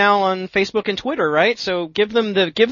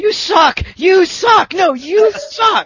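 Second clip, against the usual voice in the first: acted very high, very slow, drawn-out shouting; 12 semitones higher, 6 dB louder than usual. Speaker reminds the listener how they yelled at a girl, retelling a yell. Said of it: "you just yelled at that girl".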